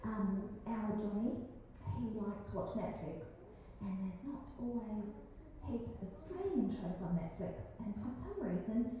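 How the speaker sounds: quiet, soft, hushed, confidential tone.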